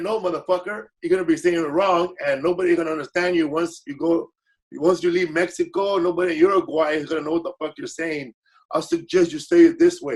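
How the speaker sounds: plain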